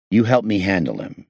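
ordinary talk

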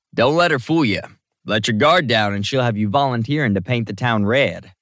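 plain reading voice

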